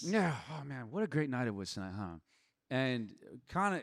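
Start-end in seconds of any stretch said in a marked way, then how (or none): 0.5-2.1 put-on pretentious, breezy, carefree tone, quieter. Retelling own words on getting back to the house: imitating own pretentious breezy tone. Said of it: "I was being a little, like, pretentious".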